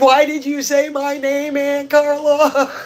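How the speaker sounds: put-on panicked, freaked-out voice. Retelling the niece asking her aunt a question: imitating someone freaked out. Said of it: "she was so freaked out".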